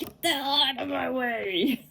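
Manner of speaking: mock irritated, angry outburst, way drawn out. Retelling a moment driving down the road: imitating own angry words. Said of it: "I was just angry".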